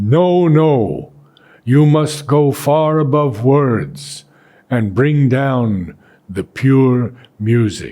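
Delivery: put-on strong, powerful, forceful voice. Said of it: "again in powerful voice".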